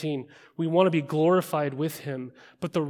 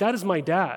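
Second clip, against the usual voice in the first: mock-upset, protective-sounding girl voice. Retelling a girl defending her dad when others pile on, imitating an upset, protective girl. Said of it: "She's like".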